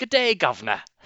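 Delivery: put-on high British accent.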